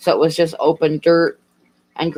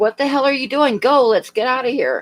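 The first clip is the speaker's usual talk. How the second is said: mock, raised, pitched-up yell; 8 semitones higher than usual. Retelling what the husband yelled after the car rolled: imitating husband yelling. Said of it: "my husband was yelling at me".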